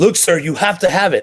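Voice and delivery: put-on worked-up, high, intense insistent voice. Retelling a woman insisting about his license address while he bought guns, imitating someone flipping out. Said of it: "she was like flipping out".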